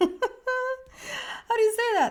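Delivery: high, slow speech through laughter.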